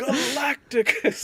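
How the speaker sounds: very high movie-style gladiator battle cry. Retelling a movie scene with a shouted name: imitating a movie shout. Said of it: "it just sounded like a Gladiator type of thing".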